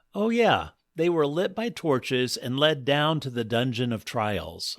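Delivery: ordinary delivery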